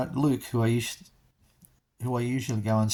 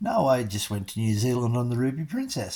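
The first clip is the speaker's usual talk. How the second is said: normal talking voice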